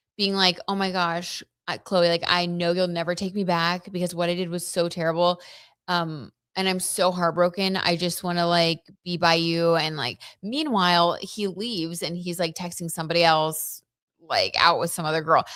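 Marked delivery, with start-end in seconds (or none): none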